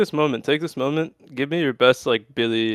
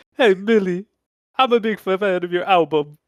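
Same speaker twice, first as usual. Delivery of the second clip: put-on Brooklyn accent, celebrity-style impression; 7 semitones higher than usual. Mimic the accent you just heard, addressing Billy in a Brooklyn Christopher Walken impression. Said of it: "like a fucking Brooklyn".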